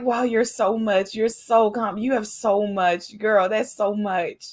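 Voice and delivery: mocking, sarcastic delivery. Explaining to the other speaker that her earlier remark was a joke, retelling her sarcastic praise. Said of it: "I was being sarcastic".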